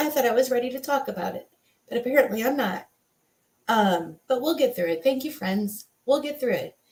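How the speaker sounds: emotional, choked-up voice, fighting back tears. Showing a necklace earned for weight loss to friends: emotional, tearful. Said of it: "I'm gonna be very emotional about this".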